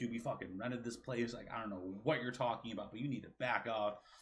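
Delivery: imitated angry voice. Retelling an angry reply to a screaming custodian: imitating own angry retort. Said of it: "I was about to freak out at him".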